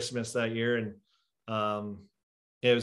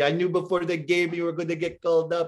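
put-on loud, raised, pitched-up French accent; 7 semitones higher, 6 dB louder than usual. Retelling his call-up, the speaker quotes his strength coach: Steph Dubay's French accent. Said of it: "had like French accent".

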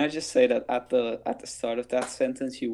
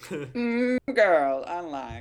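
put-on Southern accent, drawled out, pitched up; 6 semitones higher than usual. Imitating another speaker's line: imitating a Southern accent. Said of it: "Why did I sound southern all of a sudden?".

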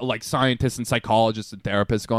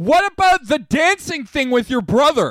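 sudden, very high, loud screamed shriek; 14 semitones higher, 5 dB louder than usual. Retelling how a grandpa suddenly screamed a question on a group Zoom call, retelling a scream. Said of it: "he screams".

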